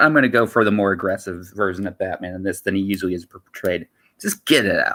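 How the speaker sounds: ordinary delivery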